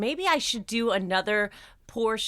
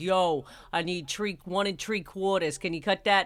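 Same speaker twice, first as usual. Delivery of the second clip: put-on Long Island New York accent; 2 semitones lower than usual. Talking about renovating with John, quoting him: John's Long Island accent. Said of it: "He's got that Long Island accent that comes out".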